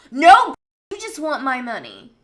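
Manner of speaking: very loud, heated, aggressive outburst with swooping pitch. Ranting on video about a woman's advice, aggressive angry rant. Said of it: "I know I'm getting aggressive on this video".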